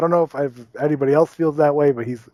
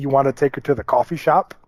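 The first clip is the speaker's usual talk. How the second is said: ordinary talk, nothing marked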